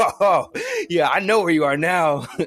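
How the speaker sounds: cocky, taunting, loud, swooping boastful yell. Retelling barreling through the woods after someone, retelling a yell. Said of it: "just yelling that out".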